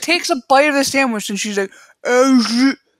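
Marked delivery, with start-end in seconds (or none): 2.1-2.8 put-on mouth-full speech, higher and louder. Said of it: "she starts talking with this stuff still".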